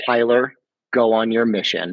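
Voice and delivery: tender, loving, gentle calling voice. Retelling a voice he believes was his dad's: imitating a loving, gentle voice. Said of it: "very very, like, loving, but gentle".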